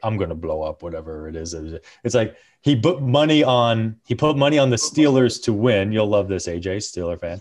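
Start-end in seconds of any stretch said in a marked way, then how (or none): 0.0-1.5 put-on mutter, lower, quieter, faster. Describing a villain's running line in a show, muttering as Bane under his breath. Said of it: "just kind of under his breath is always like".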